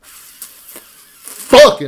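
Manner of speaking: loud, forceful, explosive built-up blurt. Biting the lower lip to build up force first: 'fucking' burst out forcefully. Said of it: "bite my lower lip and just, yeah. like, build up as much force in there as I can".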